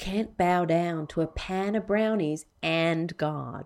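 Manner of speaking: put-on Tennessee accent, put on. Reading out the first of five items, in a Tennessee accent. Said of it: "the only bit I want to do in a Tennessee accent".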